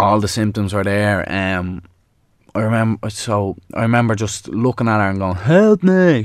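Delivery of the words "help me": acted-out scream, much higher and louder. Recalling seeing her with stroke symptoms, the speaker reenacts shouting for help. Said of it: "shouting, like screaming out for help".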